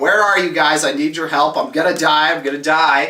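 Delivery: ordinary delivery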